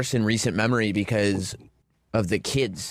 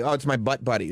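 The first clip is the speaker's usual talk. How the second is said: normal talking voice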